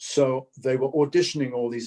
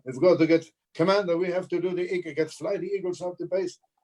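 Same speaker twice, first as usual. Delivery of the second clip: bad, put-on Italian accent; 6 semitones higher than usual. Retelling reading dialogue for a production company, in a put-on Italian accent. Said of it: "I'm doing my Italian accent".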